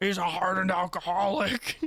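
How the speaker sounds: rough, raspy, hardened voice. The speaker mimics how a character called a hardened alcoholic talks, raspy hardened-alcoholic voice. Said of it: "when he talks like this".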